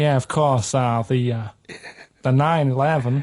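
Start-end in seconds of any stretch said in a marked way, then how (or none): 2.2-3.2 speaking in American accent. Repeating the phrase when asked to: American accent. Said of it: "Do that American accent again?".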